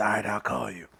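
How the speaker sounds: raspy voice, line rasped out. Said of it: "he spoke with a rasp".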